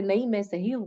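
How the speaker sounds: usual speaking voice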